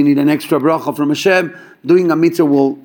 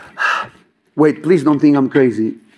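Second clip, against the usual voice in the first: mock crying, tearful pleading sound. Retelling what a man said after five minutes of crying, imitating someone crying. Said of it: "after five minutes crying".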